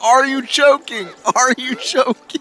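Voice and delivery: play-acted yelling, very high. Retelling how someone yells at a little kid: imitating someone yelling. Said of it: "He just yells at the little kid".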